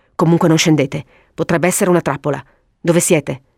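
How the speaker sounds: ordinary delivery, nothing marked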